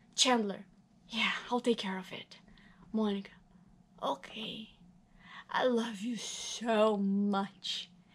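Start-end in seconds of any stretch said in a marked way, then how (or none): 4.0-7.9 put-on drunk voice, much slower. Reading the script as Monica, very drunk, answering Chandler, very drunk Monica. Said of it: "He goes out into the hall and finds a very drunk [name] lying up against [name] and [name]'s door".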